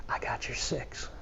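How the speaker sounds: soft, slow, hushed, close whisper. Retelling what a Vietnam Marine whispered in his ear, retelling a whispered line. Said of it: "he just whispers in my ear".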